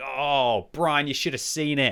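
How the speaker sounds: put-on Australian accent, slipping into it. Acting out a player's pub story about a tank game, in an australian accent. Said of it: "did I just go into an Australian accent then?".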